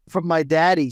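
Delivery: plain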